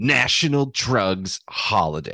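grating, disapproving, judgmental tone. Recalling a woman's remark, the speaker imitates her grating, judgmental voice. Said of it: "just that grating sound of judgment".

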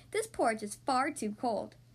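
plain

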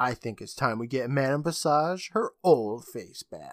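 ordinary talk

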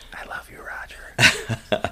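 very slow, drawn-out whisper. Retelling whispering to roger while sleeping: imitating own whisper. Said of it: "I whispered that in his ear".

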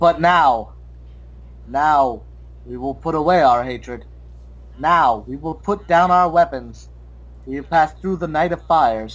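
ape voice, read aloud. Reading a passage aloud after offering to do it, reading like an ape. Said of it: "I'll read it like an ape".

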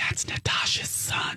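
unvoiced whisper.

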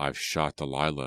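plain reading voice

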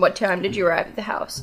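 usual speaking voice

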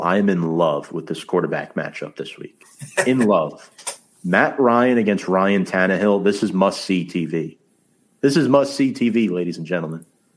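sarcastic, exaggerated fake gushing excitement. Previewing a game with a co-host: mock enthusiasm, sarcastic. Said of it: "in the most sarcastic way possible".

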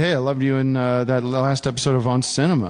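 normal talking voice

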